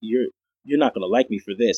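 imitated smiling voice. Retelling a doctor's words about an injury: imitating someone saying it smiling. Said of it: "And he says it smiling".

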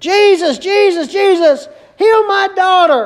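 high, desperate, repeated begging cry. Retelling the Canaanite woman calling out to Jesus, retelling a scream. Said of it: "She is screaming. She's yelling. She's crying".

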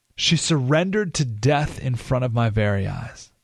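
ordinary talk

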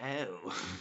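soft, hushed, tattling snitch tone. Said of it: "I've been like".

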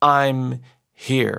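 mild voice, pressed home with weight, emphatic, firm. Retelling a woman who stayed standing in a packed courtroom, very loud. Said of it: "she said one last time in a very loud voice".

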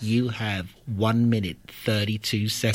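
low, flat, level mechanical voice. Imagining a talking gadget telling the time left: Stephen Hawking mechanical voice. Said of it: "spoke like Stephen Hawking's in a mechanical voice".

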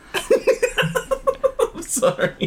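words breaking into laughter while talking. Apologizing while others retell a film scene, laughing while talking. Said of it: "I can't make it through this without laughing".

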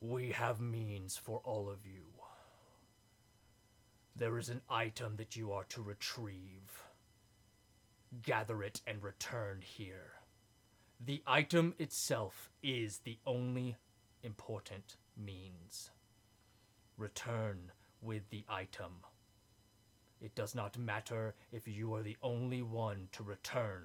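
low, deep, weighty voice of a towering giant. A towering figure looks down and addresses the group, deep, booming voice. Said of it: "in this deep, booming voice".

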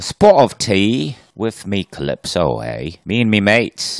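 loud, super exaggerated British accent. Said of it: "with super exaggerated British accent".

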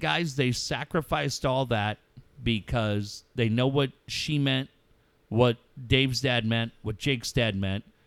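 ordinary talk, nothing marked

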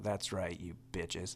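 muttered under the breath. A performer retells what he says as he's introduced on stage, muttered under the breath. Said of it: "out loud but real under my breath".

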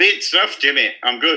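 put-on Scottish accent. Greeting the podcast host who asked how he is: Scottish accent. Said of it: "I love that Scottish accent".

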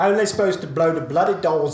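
loud, nasal, pinched-nose movie-star voice. Trying the line again after correction: Michael Caine impression. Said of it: "I wish I knew how to do a Michael Caine impression".

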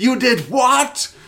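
put-on furious outburst, voice shooting very high. Retelling a film scene where Gump goes apeshit at Tom Cruise's character: imitating Gump going apeshit. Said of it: "he's going totally apeshit".

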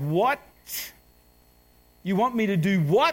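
mock shocked, stunned, disbelieving outburst. Retelling own reaction to being offered the children's ministry: imitating own shocked reaction. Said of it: "I could have fallen off the couch".

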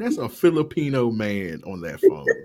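ordinary talk, nothing marked

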